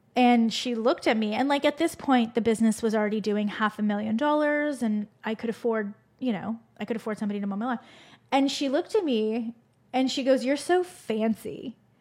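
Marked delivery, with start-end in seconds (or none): 10.5-11.8 mock judgmental, pointed little dig. Retelling what a woman said on seeing the speaker could pay for lawn mowing: mock-judging tone. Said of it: "And just the way she said it, I was like, oh, you're judging me".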